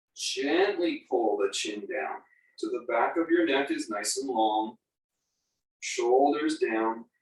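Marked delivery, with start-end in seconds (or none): 0.2-1.1 stress on the word gently. Guiding a neck stretch in a pose: stress on GENTLY. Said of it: "emphasize the word gently".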